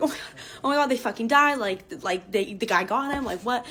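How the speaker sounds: mock frantic, panicked group freaking-out outburst. Retelling realising two friends were missing: imitating group freaking out. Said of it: "We all start freaking out".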